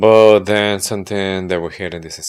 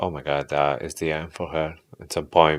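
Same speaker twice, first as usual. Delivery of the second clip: ordinary delivery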